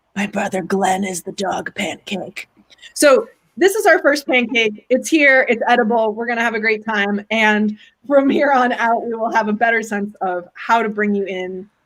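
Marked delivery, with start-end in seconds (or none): 0.1-2.4 hushed, conspiratorial, secret-sharing stage whisper. Quoting a friend's line about the first pancake, retelling a stage whisper. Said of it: "says in sort of a stage whisper".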